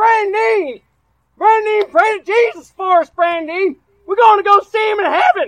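very high, very loud desperate, panicked cry. Retelling swerving while driving and calling to brandon, retelling a yell. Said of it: "I yelled out".

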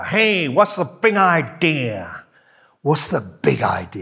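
New York cabbie voice and accent. Speaker noticing his phrase sounds like a new york taxi driver, in that accent. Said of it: "I sound like a New York taxi driver".

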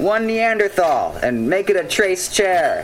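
high, loud yelling. A coffee-shop worker calls out a customer's coffee order, yelling it. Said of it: "Who are you yelling at?".

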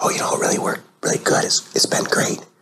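imitated whisper. Retelling what a woman in the waiting room told the doctor: imitating a patient whispering. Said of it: "why are you whispering?".

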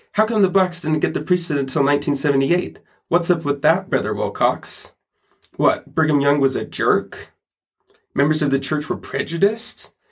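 put-on challenging, confrontational, combative tone. Quoting a man who acted out a challenging question, in a mock-combative voice. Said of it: "he goes into kind of like a combative voice".

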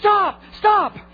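high, loud, urgent yell, close and intense.

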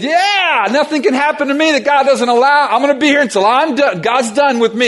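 high, laughing scream through laughter. Retelling a friend on a bus above cliffs: imitating Kurt laughing and screaming. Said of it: "And he was laughing, screaming".

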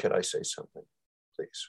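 very quiet, breathy, almost whispered. Retelling a young woman raising her hand to speak: imitating a very quiet voice. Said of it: "Very quiet voice".

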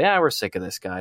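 plain

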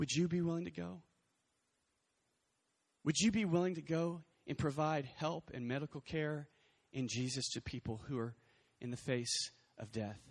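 small, quiet-sounding voice. Imagining the call to help the dying, voicing God in a small voice. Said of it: "God probably just said in a small voice".

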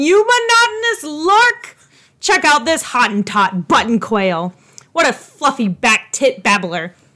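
barking delivery kept mild, without real force. Acting out what gets yelled when cut off in traffic: mock yelling insults. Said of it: "You will hear me yelling".

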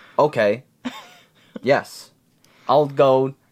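very slow, emotionless monotone drone. Imitating the movie character Tom, who speaks without emotion: emotionless Tom imitation. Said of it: "there's no emotion behind what he says".

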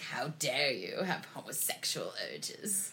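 slow, put-on British accent. Saying the phrase as the other speaker asked: put-on British accent. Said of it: "you gotta say it in a British voice".

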